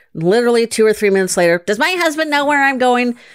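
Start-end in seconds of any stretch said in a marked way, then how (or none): 1.7-3.1 high, irritating tone with rising inflection. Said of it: "that's a really irritating tone of voice".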